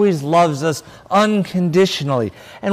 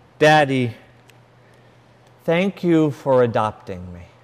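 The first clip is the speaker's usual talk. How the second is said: imitated very sweet voice, lower pitch; 8 semitones lower, 3 dB quieter than usual. Retelling what his adopted daughter said getting into the car, imitating a very sweet voice. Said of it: "with a very sweet voice".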